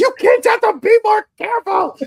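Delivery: very loud, shrill, piercing, high-pitched scream. Recounting a scene where a man accidentally shoots himself, retelling a scream. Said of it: "then Dale screams".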